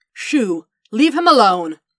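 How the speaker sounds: commanding regal voice. Narrator reads a woman ordering a goose to leave a droid alone, in her best queen voice. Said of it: "Padme ordered the goose in her best queen voice".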